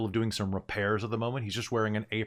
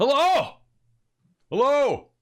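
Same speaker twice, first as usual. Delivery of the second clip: thick dwarf voice, very high, very loud bellow; 11 dB louder than usual. Narrator voicing a distant dwarf calling across the pavilion, thick dwarven bellow. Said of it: "You hear a thick dwarven voice bellow out".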